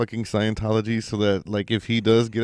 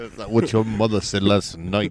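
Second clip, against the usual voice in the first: put-on Scottish accent. Repeating the Sean Connery bit: Sean Connery impression. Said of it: "impersonation of an impersonation of Sean Connery".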